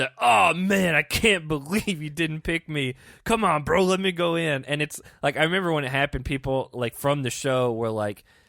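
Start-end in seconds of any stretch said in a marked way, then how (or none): 0.2-4.6 put-on, slow, drawn-out begging and pleading. Speaker acts out a man's reaction to not being picked, imitating pleading. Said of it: "He was pleading".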